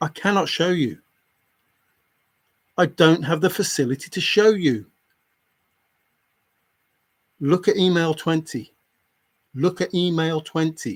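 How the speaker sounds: anger building, pitch rising. Arguing with someone who won't listen, getting angry. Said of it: "Now I am getting angry".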